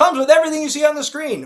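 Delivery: very high, loud TV commercial announcer voice. Describing a limited edition set, the speaker repeats a phrase in commercial announcer voice. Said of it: "it sounds like a commercial".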